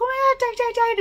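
very high, frantic, fast panicked yell. Recounting a first mountain bike ride at a tight corner, retelling a yell. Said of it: "I'm yelling out for all of the world to hear".

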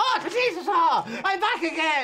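very high, very loud Irish leprechaun voice. Streamer doing a voice on request for viewers, Jimmy the Leprechaun accent. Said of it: "I'll do a leprechaun accent called Jimmy".

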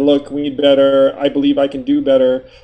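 ordinary talk

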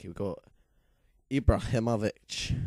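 put-on Scottish accent. Going through the team of the week, naming a player in a Scottish accent. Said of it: "I do know why I said that in a Scottish accent".

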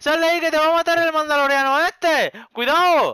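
alarmed, urgent shouting.

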